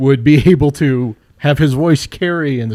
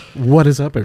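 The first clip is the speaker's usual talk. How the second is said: low, calm, soothing broadcaster voice. A newly introduced speaker greets the podcast audience in a deep voice. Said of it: "you get into the deep voice".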